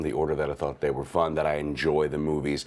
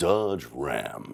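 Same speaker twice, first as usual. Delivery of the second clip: deep commercial voiceover announcer voice; 2 semitones lower than usual. Showing a commercial audition read: deep commercial announcer voice. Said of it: "When I get that deep voice, I immediately go to my commercial auditions".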